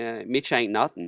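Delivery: ordinary delivery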